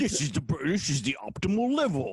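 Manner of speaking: attempted British accent. Asked by another speaker to say it in a british accent: british accent. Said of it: "do it in a British accent".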